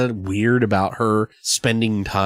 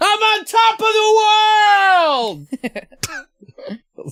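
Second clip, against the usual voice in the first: very high, drawn-out, stretched scream; 4 dB louder than usual. Retelling a movie scene where a character screams: DiCaprio impression screaming. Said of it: "that's my DiCaprio impression".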